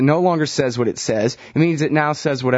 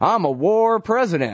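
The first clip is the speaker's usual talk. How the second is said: slow, drawling put-on Texas accent; 6 semitones higher than usual. Quoting Bush calling himself a war president: Bush impression, fake Texas accent. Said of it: "he does the fake Texas accent better than I do".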